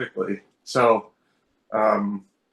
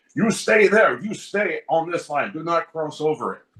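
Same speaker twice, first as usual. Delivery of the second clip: put-on stern, testy, strict guard voice, pitched up; 5 semitones higher than usual. Retelling how an airport security guard ordered them to stay put: imitating a testy airport guard. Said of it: "let's say, Gestapo or Schustaffel".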